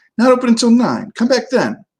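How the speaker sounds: thin, very high, squeaky voice. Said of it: "came the squeaky voice".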